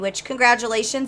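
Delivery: normal talking voice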